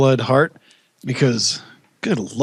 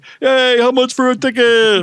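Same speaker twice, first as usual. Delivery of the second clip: very high pitch, slow and drawn out; 11 semitones higher, 4 dB louder than usual. Retelling Special Ed calling a movie theater: Special Ed voice. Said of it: "and he's like".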